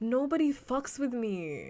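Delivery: high, slow, drawn-out whine. Retelling a stream where someone was teary and whining: imitating Adin Ross whining. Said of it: "whining on stream".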